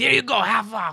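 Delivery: very high, irritated, pissed-off clerk voice. Retelling how the store worker got really pissed: imitating an angry store worker. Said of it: "really pissed".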